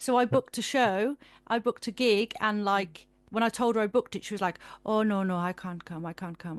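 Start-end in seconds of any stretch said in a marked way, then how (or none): 4.9-6.6 thick put-on Caribbean accent, lower pitch. Retelling nan backing out of the gig booked for her; thick Caribbean accent. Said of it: "she's got like a real thick Caribbean accent".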